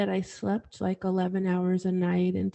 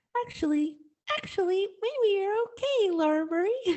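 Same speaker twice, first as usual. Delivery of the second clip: little squeaky mouse voice, very high; 12 semitones higher than usual. Recalling an inner voice that reassured them as a child: little squeaky voice. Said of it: "this little squeaky voice deep inside that said".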